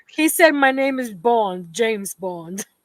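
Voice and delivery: imitated English accent. Retelling what a man said, in an english accent. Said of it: "The Eng- you know English accent".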